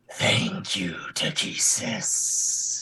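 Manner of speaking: rumbling, deep, guttural growl from the throat. Storyteller voicing a creature thanking a player character, deep, guttural voice. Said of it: "you hear this deep, guttural voice".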